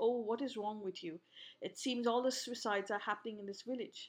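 usual speaking voice

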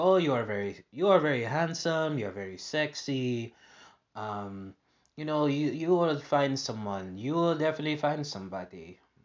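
Israeli accent impression. Speaker retells what a woman told them on their last day, imitating her Israeli accent. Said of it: "in her Israeli accent".

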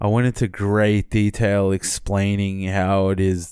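ordinary talk

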